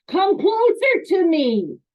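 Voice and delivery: angry, loud, drawn-out irate voice. Demonstrating a tone that clashes with the words being said, in an angry tone. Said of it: "I'm using an angry tone of voice".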